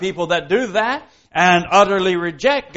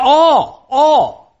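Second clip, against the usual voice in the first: heavy stress placed on the word "all"; 8 semitones higher, 6 dB louder than usual. Reading a Scripture verse about the Day of Judgment, with stress on 'all'. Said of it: "just emphasize that word all".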